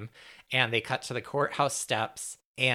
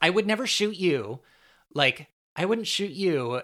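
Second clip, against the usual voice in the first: raised, high-pitched shouting; 7 semitones higher, 4 dB louder than usual. Retelling a TV scene as a man leaves her apartment, retelling a character's shout. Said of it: "she shouts".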